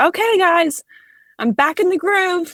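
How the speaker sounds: put-on very high, full-volume bellowed shout. Retelling how a student returned to class: imitating a student shouting. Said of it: "she's just shouts as loud as she can".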